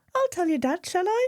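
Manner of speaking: very high, squeaky cartoon voice. Retelling what a woman said at the end of a conversation, use a squeaky Minnie Mouse voice. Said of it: "In this kind of squeaky Minnie Mouse voice".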